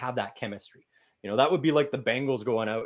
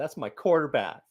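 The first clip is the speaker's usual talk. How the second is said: mock weepy, through-the-tears crying voice; 4 semitones higher than usual. Recalling an old quote: imitating Terrell Owens crying. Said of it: "Terrell Owens crying and going".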